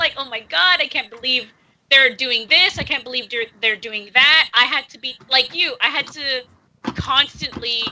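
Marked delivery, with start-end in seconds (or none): none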